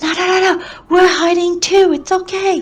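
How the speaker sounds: hushed whisper. A player speaking in character during a tabletop game, whispering. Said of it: "so I'll kind of whisper".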